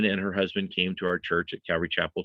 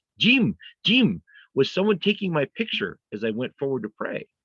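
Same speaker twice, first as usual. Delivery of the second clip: put-on woman's urgent Hebrew accent, pitched up; 7 semitones higher, 3 dB louder than usual. Retelling what a woman from church asked him: imitating Ramon's Hebrew accent. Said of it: "she came to me in her Hebrew accent".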